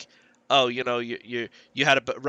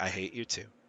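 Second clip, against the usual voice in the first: said tenderly, with real fondness; 6 semitones lower, 11 dB quieter than usual. Retelling a character's reply from a book, imitating a loving tone. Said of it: "But he said it, like, lovingly".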